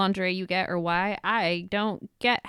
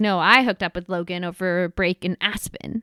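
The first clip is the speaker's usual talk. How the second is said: usual speaking voice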